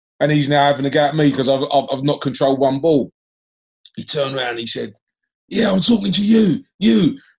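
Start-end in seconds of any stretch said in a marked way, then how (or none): 5.5-7.1 mock booming voice, drawn out. Retelling what a man said after turning around at him: booming voice. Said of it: "I heard this booming voice".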